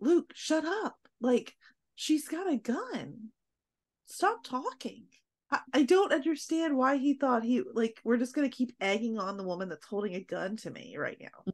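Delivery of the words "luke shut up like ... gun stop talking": put-on, fed-up, exasperated screaming with pleading tone. Recounting watching a tense scene, retelling screaming at the screen. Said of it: "I was screaming at the screen".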